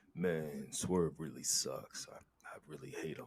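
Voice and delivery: dropped, very deep, soft and hushed voice. Showing how to talk trash about someone, in a deeper voice. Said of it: "I just gotta be have a deeper voice".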